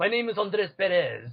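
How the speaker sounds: thick put-on Spanish accent. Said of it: "a Spanish accent to it".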